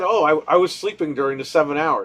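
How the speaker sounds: ordinary talk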